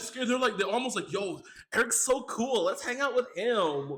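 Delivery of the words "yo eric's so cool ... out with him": put-on slow, drawn-out Valley Girl drawl. Describing how the ghosts seem to feel about Eric, in a Valley Girl voice. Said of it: "I went Valley Girl on you".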